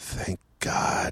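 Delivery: low mutter under the breath, just audible. Retelling a guy at the back of the room: imitating a low mutter. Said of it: "very low, but audible enough".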